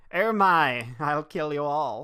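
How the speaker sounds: loud, slow, full-camp theatrical villain voice. Imitating the dubbed villain talking to himself: full camp Rose voice. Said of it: "he goes full camp".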